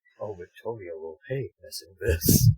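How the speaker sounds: whispering. Voicing a character's remark during the game: whispering. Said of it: "Trevor probably just whispers".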